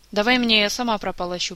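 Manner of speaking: usual speaking voice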